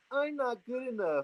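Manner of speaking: very high whimpering whine, not nasal. Advising listeners to repeat their self-criticism mockingly, demonstrating it in a whiny voice. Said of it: "say it in a whiny voice".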